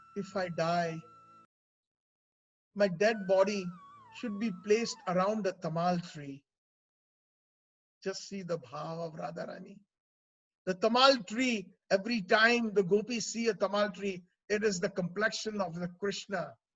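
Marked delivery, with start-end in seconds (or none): 0.2-9.8 words kept very low. Storyteller voicing a character's words to those gathered, in a very low voice. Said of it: "Radhika said in a very low voice".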